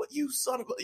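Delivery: acted, breathy, whispered furious outburst, cut off. Retelling how a wrestler dropped the title, imitating someone yelling. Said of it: "he dropped the title and just is yelling".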